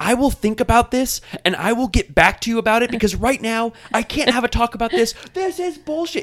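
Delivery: shrill, very high, fired-up screaming. Retelling what Stassi said in a scene: imitating Stassi screaming. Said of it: "Stassi's, like, screaming. She was like".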